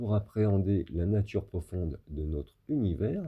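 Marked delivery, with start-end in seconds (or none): none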